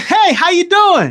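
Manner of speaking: high, fake-friendly, put-on cheerful voice. Speaker showing how someone greets people while smiling, mock fake-friendly greeting. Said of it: "Smiling like this".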